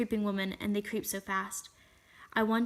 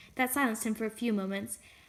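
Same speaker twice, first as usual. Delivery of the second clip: ordinary talk, nothing marked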